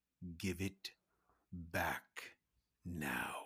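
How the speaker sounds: very low, dark, menacing tone. Leaning close to another character's ear and speaking in a dark, menacing way. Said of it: "say in a very dark and menacing way".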